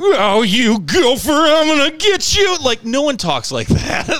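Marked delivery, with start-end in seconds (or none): 0.0-2.6 loud, swooping, hammy, cheesy overacting. Speaker demonstrating acting from the 70s and 80s, over-exaggerated cheesy acting. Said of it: "this over-exaggeration. And it just translates to be really cheesy".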